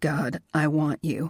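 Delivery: low, harsh, rough-edged voice. He answers her, speaking in a low, harsh voice. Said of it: "he said in a low, harsh voice".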